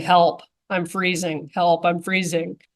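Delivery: plain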